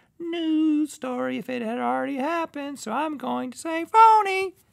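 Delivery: very high, cranked-up put-on voice. Giving a guess on a quiz, in a high-pitched put-on voice. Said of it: "(high pitched)".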